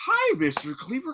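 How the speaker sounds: very high-pitched, fawning, sucking-up tone. Comparing someone's hug to a sitcom suck-up: Eddie Haskell ass-kisser voice. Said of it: "As soon as they come around".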